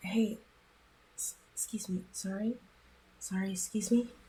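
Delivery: hushed, soft whisper, close to the ear. A player's character leans over to the man in the next seat, whispering. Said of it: "lean over and whisper".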